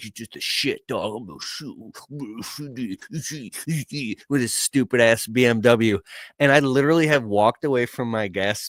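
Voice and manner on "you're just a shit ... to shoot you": put-on quiet, low-key taunting in a punk kid's tone. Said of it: "and he's like".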